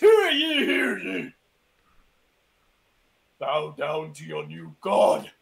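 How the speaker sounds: thunderous, booming, very loud, rough voice. Narrator voicing a figure walking forward in the story, booming loud voice. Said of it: "he booms out with a loud voice".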